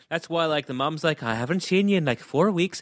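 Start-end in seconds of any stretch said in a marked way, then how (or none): 1.2-2.8 put-on, fake Irish accent. Imitating the mum's complaint about her husband's extra shifts: put-on Irish accent. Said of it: "I don't know why we're doing that accent".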